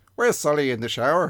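loud put-on Irish accent in a character voice. Quoting a line from the film being discussed, in an Irish accent. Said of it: "Why have you got to do an accent?".

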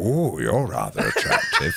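very deep, very low, swooping, sing-song delivery. Acting out Ian McKellen hitting on people at a gas station: Ian McKellen impression. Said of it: "He's like".

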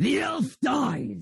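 high, screamed monster cry. Game master voicing a creature hit by fire damage, screaming out. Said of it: "It screams out to someone else".

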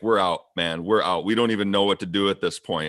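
ordinary delivery

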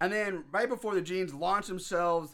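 usual speaking voice

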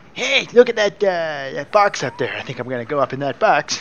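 loud, high pet-cat voice, hardly cat-like. Showing the voice they do for their cat, in Pepper's voice. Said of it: "I could do it in uh, Pepper's voice".

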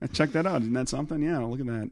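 natural voice with a borrowed comedian's cadence. Showing the others a Norm Macdonald cadence, not his voice. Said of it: "I can't do his voice, but I can do his cadence".

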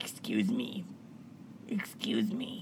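breathy, hushed, sleepy morning whisper. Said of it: "That's her morning voice".

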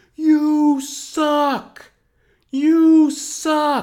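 very high, very slow, drawn-out, jeering scream. Recalling being drunk at a concert and yelling at the band, retelling screaming. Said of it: "I was just screaming".

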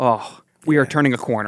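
plain

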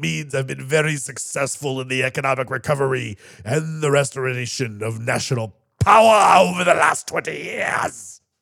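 mock theatrical delivery. Channeling Putin's guardian spirit from a book: dramatic Putin voice. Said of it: "it may have been kind of a dramatic voice".

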